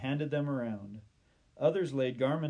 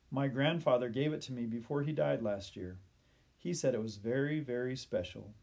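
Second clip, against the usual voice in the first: usual speaking voice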